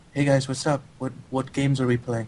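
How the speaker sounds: easygoing, casual, relaxed tone. Retelling how a fellow player logged on and greeted everyone: imitating a fellow player. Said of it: "he'd log on and he'd be like".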